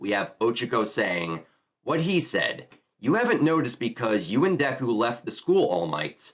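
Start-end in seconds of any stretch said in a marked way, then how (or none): none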